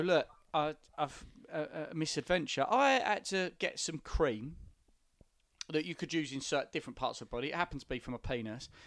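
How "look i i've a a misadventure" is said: normal talking voice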